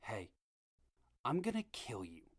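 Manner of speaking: hushed, menacing half-whisper. Retelling what the speaker half-whispered to a man who leaned in, retelling a half-whisper. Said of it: "but I whispered".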